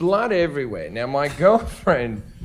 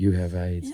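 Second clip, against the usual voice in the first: close, sly, hushed stage whisper; 8 semitones lower, 5 dB quieter than usual. Retelling how a friend leaned over in the car: imitating a half-whisper. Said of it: "he'd just lean over to me and whisper".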